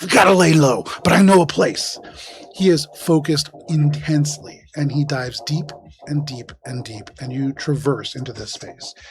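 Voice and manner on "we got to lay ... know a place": through clenched teeth, higher and louder. Voicing a driver diving deep through a pipe: through gritted teeth. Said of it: "Through gritted teeth".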